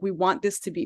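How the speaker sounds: normal talking voice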